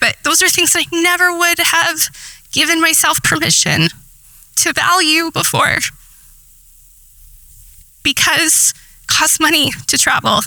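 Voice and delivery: emotional, moved voice. Sharing a personal story with listeners, getting emotional. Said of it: "I'm getting emotional talking about it".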